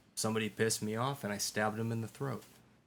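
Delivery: dry, level, dead-serious deadpan delivery. Joking when asked about being in an adult fight: mock-serious deadpan delivery. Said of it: "There's my deadpan delivery".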